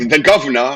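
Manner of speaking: attempted British accent. Retelling how a commentator said a name: Excalibur's British accent. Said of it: "listening to Excalibur try and say the Governor in a British accent".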